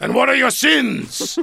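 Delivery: booming thunder voice, very high and rough. Recalling a first confession, quoting the priest's question, imitating Father Reedy thundering. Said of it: "He like thunders at me".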